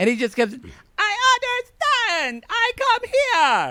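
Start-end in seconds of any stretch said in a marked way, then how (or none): 1.0-3.7 clumsy put-on voice, pitched way up, dragged out slowly. Retelling what he said in a scene: Floyd impression. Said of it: "my Floyd impression's not good".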